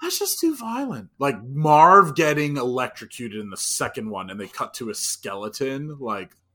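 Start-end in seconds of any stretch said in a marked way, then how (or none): 0.0-1.1 very high, squeaky put-on comedic voice. Imagining their mom saying a line, in a Jim Gaffigan voice. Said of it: "I just hear her saying it in a Jim Gaffigan voice".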